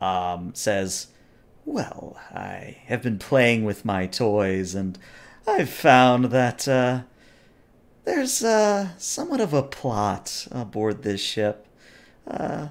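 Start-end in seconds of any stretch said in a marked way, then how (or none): 1.6-12.7 very commanding, seductive, swooping voice. Voicing the interrogator replying to a question: very dominant and seductive. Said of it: "reply in a very dominant and seductive way".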